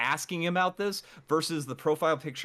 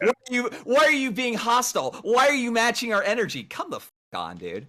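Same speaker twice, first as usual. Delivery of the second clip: worked-up, heated, agitated, loud, pitched-up rant; 8 semitones higher, 6 dB louder than usual. Pushing back at the others in a heated group talk, agitated. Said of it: "Just seem a little agitated".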